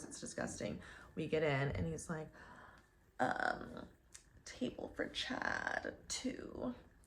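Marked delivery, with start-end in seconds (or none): 4.4-6.7 whispered, breathy bro drawl. Speaker retells a man asking for a restaurant table, in a Chad kind of voice. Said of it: "he was using a Chad kind of voice".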